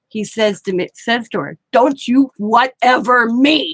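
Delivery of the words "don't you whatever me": acted stern, no-nonsense, slow delivery. Retelling how her husband scolded someone on the phone: imitating husband's stern tone. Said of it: "he says in that tone".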